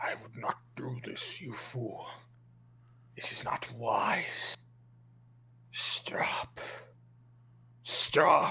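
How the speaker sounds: put-on slow, drawn-out demonic voice. Running the game for the players, voice the creature's line in a demonic voice. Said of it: "in the demonic voice".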